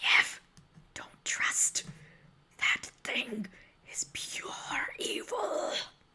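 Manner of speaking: hushed, secretive whisper. Speaker acts out a character whispering a warning to niev, retelling a whisper. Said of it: "whispers to you and is like".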